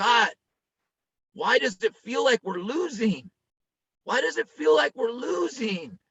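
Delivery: acted tearful pleading. Recounting praying to god while driving home, retelling a tearful prayer. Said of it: "I'm driving home and I'm crying".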